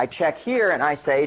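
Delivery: ordinary talk, nothing marked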